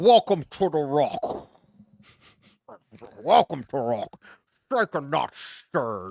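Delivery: gravelly voice, like a mouth full of rocks. After mentioning a rock sponsor, the speaker does his Sean Connery impression for Torres. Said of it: "want to hear me my Sean Connery impression".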